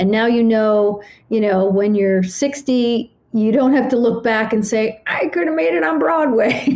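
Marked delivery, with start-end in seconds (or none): 5.1-6.7 put-on high-pitched little old lady voice. Speaker imagines looking back at sixty, old lady voice. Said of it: "I love how I do old lady voice".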